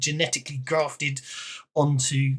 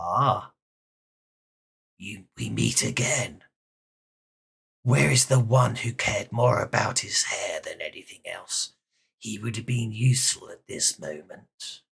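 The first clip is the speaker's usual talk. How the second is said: low, grating, rasping, metallic-sounding voice; 6 semitones lower than usual. Narrating a game scene, the speaker voices a rasping metallic voice. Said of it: "a rasping, metallic sounding voice goes".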